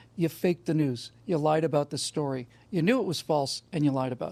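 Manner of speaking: ordinary talk, nothing marked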